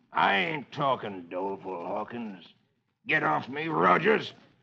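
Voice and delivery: defiant, snarling western villain voice. A narrator reads the captured outlaw's reply to the men holding him, snarling. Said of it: "The outlaw snarls".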